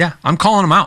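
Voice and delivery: ordinary talk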